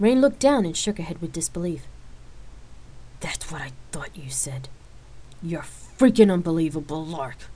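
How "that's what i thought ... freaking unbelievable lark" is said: open disgust, fed up, disbelieving. Rain answers Lark's question, speaking with disgust. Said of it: "Rain answered with disgust".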